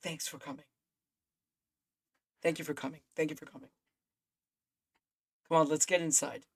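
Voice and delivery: barely voiced, hushed, just above a whisper. Voicing a quiet leader greeting new arrivals: just above a whisper. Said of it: "he's talking a little bit over a whisper".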